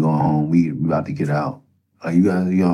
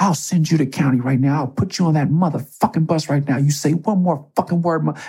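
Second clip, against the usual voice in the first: very high, in-your-face, spitting angry shout; 11 semitones higher than usual. Retelling a guard getting in his face: imitating a guard shouting in his face. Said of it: "he's in my face spitting".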